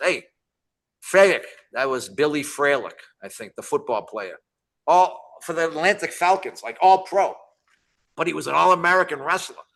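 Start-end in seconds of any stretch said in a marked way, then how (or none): 0.0-1.4 loud, halting, broken English delivery. Retelling what the Sheik said after a Battle Royal meeting: imitating the Sheik's broken English. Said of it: "in his broken English".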